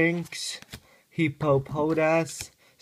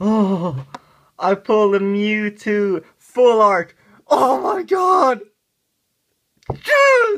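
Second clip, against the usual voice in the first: very loud, high, trembling with excitement; 6 semitones higher, 10 dB louder than usual. Opening a card pack on video and pulling a wanted card, shaking with excitement. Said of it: "I'm shaking, look at me".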